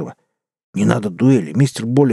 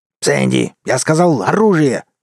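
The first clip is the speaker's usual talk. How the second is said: barked, swooping, sharp delivery; 4 semitones higher than usual. In a saloon quarrel, the wolf barks at Sandy. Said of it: "рявкнул волк".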